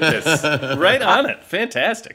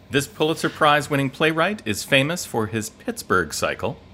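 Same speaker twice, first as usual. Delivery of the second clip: ordinary delivery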